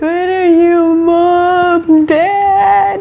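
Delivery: put-on very high, wailing, sobbing little-kid voice. Retelling being lost as a little child among strangers, acting out crying as a child. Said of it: "I started crying".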